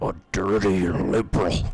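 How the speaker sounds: very deep, loud put-on bellow. Reacting to a game character's line with an Alex Jones impression. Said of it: "my best, best Alex Jones impression".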